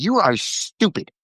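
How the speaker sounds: put-on high, berating little old lady voice. Imitating a grandmother berating people: imitating grandmother berating. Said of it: "little old lady, she'd just be like".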